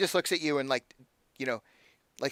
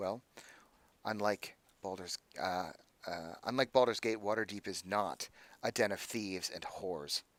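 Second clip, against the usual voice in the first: low, barely audible mutter under the breath; 5 semitones lower, 9 dB quieter than usual. Voicing an official answering the party, barely under her breath: muttered under her breath. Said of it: "barely under her breath says".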